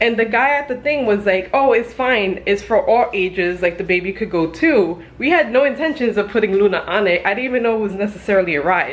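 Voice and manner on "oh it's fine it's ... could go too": ordinary talk, nothing marked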